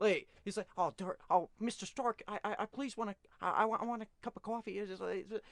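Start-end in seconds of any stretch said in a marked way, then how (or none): 0.8-4.8 put-on American accent, stammering, tripping over words. Retelling a line reading done in Tom Holland's American accent. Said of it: "into his American accent".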